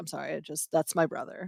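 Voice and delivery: put-on choked-up voice. Speaker retells a player speaking at a press conference, imitating someone choked up. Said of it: "you could hear him, like, choked up".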